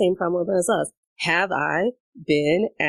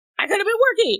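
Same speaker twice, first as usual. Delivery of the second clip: put-on, very high, screeching scream. Retelling a promo where someone screams about working, imitating Vicki screaming. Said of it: "screaming that she could be working".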